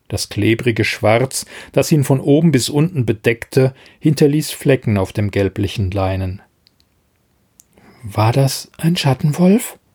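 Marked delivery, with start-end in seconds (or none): 8.0-9.7 quavering, trembling, shaky, words unsteady. Mischa, bandaging Fjodor's thigh, asks him a question in a trembling voice. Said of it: "fragte Mischa mit zitternder Stimme".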